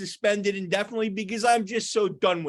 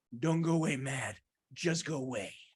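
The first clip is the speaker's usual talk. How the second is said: put-on gruff movie sergeant voice, lower and quieter; 7 semitones lower, 8 dB quieter than usual. Quoting a film sergeant telling a player to go away: Clint Eastwood impression. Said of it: "we have a Clint Eastwood impression".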